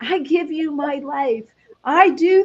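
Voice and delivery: high, drawn-out put-on yell. Retelling standing in the kitchen after breaking an ankle: retelling yelling at God. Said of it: "I'm yelling at God".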